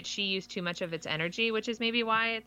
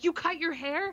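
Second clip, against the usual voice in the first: put-on scream, higher; 7 semitones higher than usual. Retelling how a girl's dad reacted to her haircut: imitating a dad screaming. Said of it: "you can hear him screaming".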